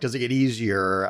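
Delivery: normal talking voice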